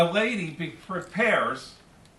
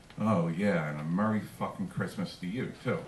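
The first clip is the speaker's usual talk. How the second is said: put-on mutter under breath, much lower, quieter; 12 semitones lower, 7 dB quieter than usual. Retelling what a mother said after being cut off while driving, imitating muttering under breath. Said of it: "she says under her breath".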